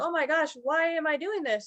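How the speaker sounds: mock crying through the words, high and teary. Retelling flooring it in a car: imitating own past crying.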